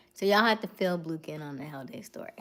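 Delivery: ordinary delivery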